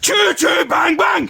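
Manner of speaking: high, stretched-out, silly, playful yell. Answering a chat request with a train call: loud playful shout. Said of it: "when a man shouts like that".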